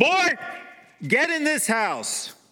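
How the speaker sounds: put-on very high, loud, churchy holy-voice shout. Speaker retells yanking the door open and calling a boy inside: retelling a sanctified shout. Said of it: "I shout in my most sanctified voice".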